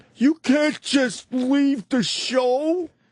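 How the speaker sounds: mock very high shrieking scream, stretched out. Retelling being screamed at for leaving early: imitating someone screaming. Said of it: "he is screaming at me, going".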